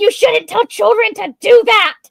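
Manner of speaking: put-on outraged outburst. Imagining someone's reaction to the story, mock apoplectic outburst. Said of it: "someone's having a fit of apoplexy".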